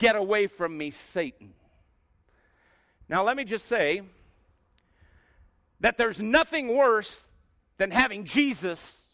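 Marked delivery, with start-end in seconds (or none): 0.0-1.5 mock severe, stern, commanding, firmly delivered tone. Retelling a sharp reply to a friend's objection: imitating a stern rebuke. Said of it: "says back to Peter very sternly".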